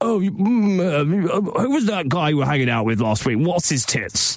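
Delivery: upper-class posh voice, gurgly blocked-drain sound. Retelling how a posh former housemate sounded: imitating a posh man. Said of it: "this really posh guy".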